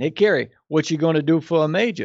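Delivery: put-on Louisiana Cajun accent. Recalling the speaker's father after the first year at LSU, father's Cajun accent. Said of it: "in his Cajun accent".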